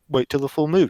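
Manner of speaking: plain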